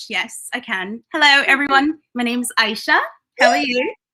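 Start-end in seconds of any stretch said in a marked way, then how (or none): 1.1-3.9 showy, higher-pitched put-on British accent. Asked whether she can do an accent too, the speaker shows a British accent. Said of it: "Aisha could do a British accent as well".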